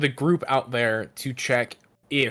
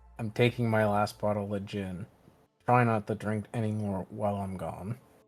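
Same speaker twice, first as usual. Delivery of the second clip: soft half-whisper under the breath; 3 semitones lower, 6 dB quieter than usual. Voicing a character who speaks to another before leaving: half-whispering. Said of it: "whispers to Orlane".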